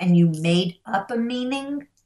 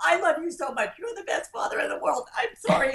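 mock sobbing, very high-pitched, tearful crying voice; 10 semitones higher, 3 dB quieter than usual. A father retells his daughter apologizing to him, imitating someone crying. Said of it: "she starts crying and she goes".

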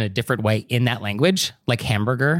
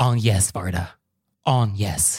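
put-on enraged voice, French pronunciation, lower pitch; 4 semitones lower than usual. Retelling how a friend corrects a mispronounced name: imitating an enraged friend, french pronunciation. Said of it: "enraged when you say the filmmaker Agnes Varda's name wrong".

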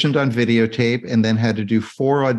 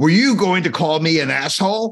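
put-on drill-instructor yell, raised and high-pitched; 6 semitones higher than usual. Retelling a favourite movie moment, yelling at Cowboy: imitating someone yelling. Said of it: "I love when he's yelling at Cowboy".

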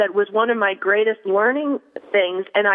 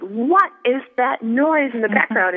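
mock angry, noxious, griping yell; 3 semitones higher than usual. Recounting a noxious client on the phone: imitating a client yelling. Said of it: "he kept yelling at me".

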